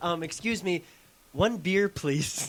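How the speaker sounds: put-on slow, sweet, gentle, polite little old lady voice. Telling friends how his mom ordered from the bartender, imitating mom's sweet politeness. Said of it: "So sweet".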